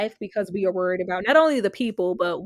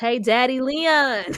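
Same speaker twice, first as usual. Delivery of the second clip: put-on baby-talk voice like a small child; 3 semitones higher than usual. Greeting Leon, saying it like baby kids. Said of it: "Gotta say it like baby kids".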